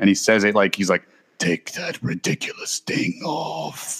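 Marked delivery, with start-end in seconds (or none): 1.4-4.0 mock angry, mean, slow drawn-out whisper. Retelling a movie scene where Snoke orders Kylo: imitating Snoke's angry, mean voice. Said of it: "he's so fucking angry and mean sounding".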